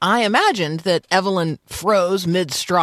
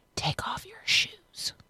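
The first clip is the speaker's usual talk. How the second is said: put-on soft, hushed, whispered child's voice; 13 semitones higher, 12 dB quieter than usual. Retelling what a girl whispered in the silent woods: imitating a child's whisper. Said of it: "whispering to me".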